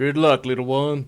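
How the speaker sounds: deep orc-like voice. After the hug, the character closes his box and speaks: deep orcish voice. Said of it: "in a deep, uh, probably orcish voice".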